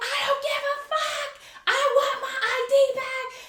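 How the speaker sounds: very high-pitched, shrill yelling outburst. Retelling an argument with the guy over getting the ID back, retelling yelling. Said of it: "I'm yelling and we're yelling at each other".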